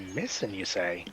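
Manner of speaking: put-on soft little old lady character voice. Answering news that a young girl went missing: little old lady voice. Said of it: "kind of like a little old lady".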